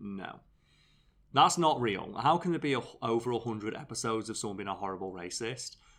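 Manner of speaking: usual speaking voice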